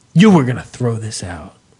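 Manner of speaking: low, stern, disapproving mom-like scold. Retelling what mom said after opening a trash bag, imitating her disapproving tone. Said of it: "that tone where it's like this is bad".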